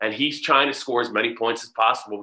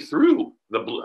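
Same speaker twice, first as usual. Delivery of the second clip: cracking, breaking voice, pitched up; 4 semitones higher than usual. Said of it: "my voice cracked there".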